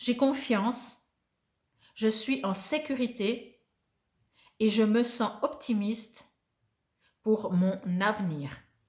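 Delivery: very slow, unhurried, deliberate. Reading an affirmation aloud for listeners to repeat, very slowly. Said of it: "je vais lire très lentement".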